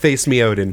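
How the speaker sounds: ordinary delivery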